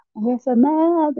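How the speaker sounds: high, shouted outburst. Retelling what her son shouted as he was leaving: imitating someone yelling. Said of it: "ele começou a gritar".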